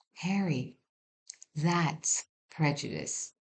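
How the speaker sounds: hushed, gentle, very soft whisper. Leaning over the counter to speak to him, in a very soft whisper. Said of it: "in a very soft voice I whispered".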